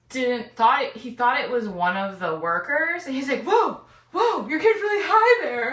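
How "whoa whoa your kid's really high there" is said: put-on, very high, loud, alarmed, freaked-out cry. Retelling how an ex reacted in a haunted house: imitating someone freaking out. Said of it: "he was, like, freaking out".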